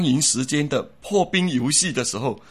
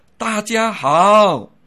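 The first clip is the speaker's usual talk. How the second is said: loud, long, stretched-out 好; 7 semitones higher, 7 dB louder than usual. Public speaking tip on greeting the audience: drawn-out 好, raised voice. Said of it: "把好字特别拉长，提高声音".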